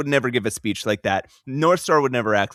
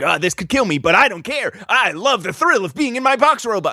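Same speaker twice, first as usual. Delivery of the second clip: weird, manic thrill-seeker voice, high and rising; 8 semitones higher, 3 dB louder than usual. Quoting a character who is acting crazy: imitating a manic Roger Box. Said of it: "he's being very weird and manic".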